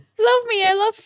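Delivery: put-on very high, begging, pleading child voice. [name] describes how Killy sounds when he does this: imitating Killy pleading like a kid. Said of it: "sounds like he's like a kid trying to get adopted".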